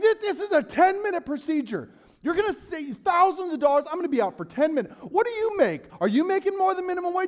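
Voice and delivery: shrill, very high, loud, frantic yelling freak-out. Retelling a past outburst at a woman over charges, retelling losing it. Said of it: "I'm losing my mind on this woman".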